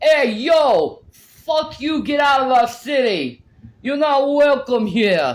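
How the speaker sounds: loud, high-pitched New York accent. Right after denying doing them, the speaker does a New York accent. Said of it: "I don't try to do New York accents".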